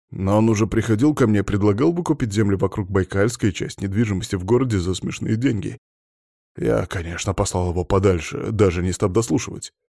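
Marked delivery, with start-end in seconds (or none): none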